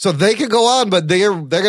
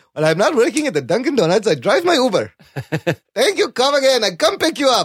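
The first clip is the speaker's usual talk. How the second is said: exaggerated Pakistani accent; 4 semitones higher than usual. Discussing whether stereotypes are authentic, doing an exaggerated Pakistani accent. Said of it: "It's not racist because I'm Pakistani".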